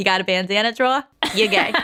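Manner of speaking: noticeable Boston accent. Podcast host repeats a line to show the accent again, boston accent. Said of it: "I literally just had a Boston accent".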